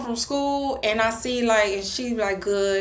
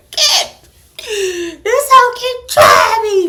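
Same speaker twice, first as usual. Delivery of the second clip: drawn-out, high, loud wailing sob; 10 semitones higher, 10 dB louder than usual. Retelling breaking down crying in an old lady's arms: imitating someone breaking down crying. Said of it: "you done broke down in that whole arms like".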